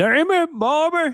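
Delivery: very high, put-on scolding cartoon voice. Showing off an impression in King of the Hill voice. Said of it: "I could do a good King of the Hill".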